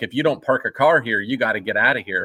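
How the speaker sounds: ordinary delivery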